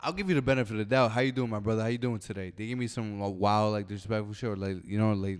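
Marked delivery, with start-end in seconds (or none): 1.1-2.5 polite, friendly customer service voice. Acting out his own greeting to a customer: polite customer service voice. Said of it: "your best customer service voice".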